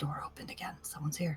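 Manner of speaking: fast, hushed, rapid whisper. Player whispering to a fellow party member during the game, whispering. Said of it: "I'm gonna whisper it again to Wyatt".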